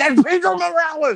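acted-out starstruck yell. Retelling an uncle recognizing a wrestler, retelling an excited fan scream. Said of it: "my uncle starts screaming like a pure mark".

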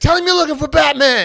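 full-throated, very loud, high-pitched, shrill yelling. Retelling how a man yelled at the neighbor: imitating a man yelling.

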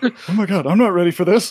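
acted panicked tone. Describing his reaction to being made captain, the speaker acts out his thoughts, mock-panicked. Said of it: "almost this panicked look on his face".

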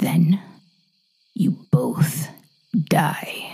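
strange, slow, unnatural-sounding voice. A man answers his captive's question, in an unnatural voice.

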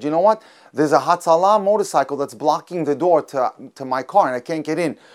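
ordinary delivery

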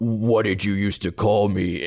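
creepy put-on demonic voice. Retelling a phone call story, doing the real creepy Gabriel voice. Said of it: "the real creepy Gabriel voice".

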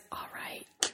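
very quiet, hushed, awkward whisper. Retelling how a man reacted on a show: imitating a whisper. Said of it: "he, like, whispers".

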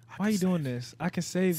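put-on whisper. Acting out throwing money and whispering in a stripper's ear: whispering in the ear. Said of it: "you throwing ten K and whispering in the ear".

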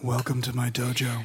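broken, halting English voice. Imitating the actor greeting visitors at his door: Steven Seagal impression. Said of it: "he talks like he's struggling to remember English".

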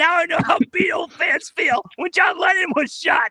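mock wailing, high-pitched, through fake sobs.

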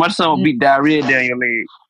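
ordinary talk

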